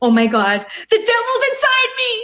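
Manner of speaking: mock, very high, frantic, shrill, rising yelling. Recounting what they yelled to a friend, retelling a yell. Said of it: "I was yelling this part".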